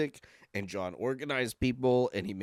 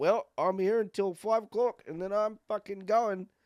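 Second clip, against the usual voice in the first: put-on very high pitched Liverpool accent; 10 semitones higher than usual. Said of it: "you did that in the accent".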